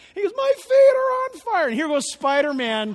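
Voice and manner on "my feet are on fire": very high, loud screaming, crying wail. Retelling a little kid answering his dad, imitating a kid crying and screaming. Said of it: "He starts crying and screaming".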